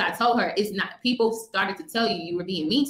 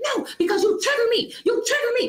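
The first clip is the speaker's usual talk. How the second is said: put-on, very high, shrill, angry yelling. Recounting an argument, imitating the woman who was yelling at the speaker. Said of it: "like just yelling and just going off".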